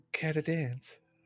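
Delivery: put-on, very feminine voice. Walking up to him and asking him to dance, in the most feminine voice. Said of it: "in the most like feminine feminine voice go".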